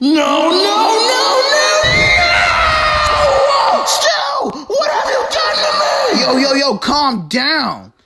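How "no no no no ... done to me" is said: put-on very high, rising little-kid screaming. Confronting another speaker: screaming like a little kid. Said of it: "You're even screaming like a little kid".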